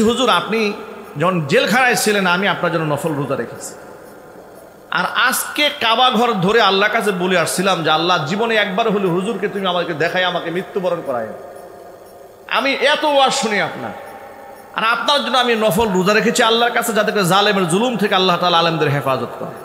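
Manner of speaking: usual speaking voice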